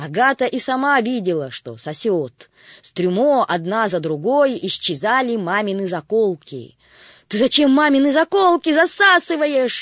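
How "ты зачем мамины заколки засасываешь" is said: loud, high-pitched yelling. Reading a story, a girl sees the vacuum sucking up mom's hairpins, shouting. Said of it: "закричала Агата".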